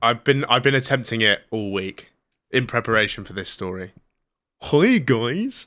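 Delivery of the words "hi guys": high-pitched, put-on cartoonish character voice. Trying out a voice practised all week for a story: impression of his voice. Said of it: "He sounds a bit like that".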